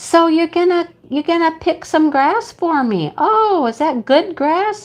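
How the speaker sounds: put-on high, cooing baby talk. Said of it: "talking to him like a kid talks to a baby".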